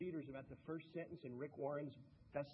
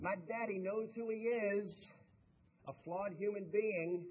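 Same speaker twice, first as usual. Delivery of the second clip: put-on raised, high-pitched, homegrown North Carolina accent; 6 semitones higher, 6 dB louder than usual. Interviewer retelling what an author said about her famous father, in Ruth's North Carolina accent. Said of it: "in that wonderful North Carolina accent".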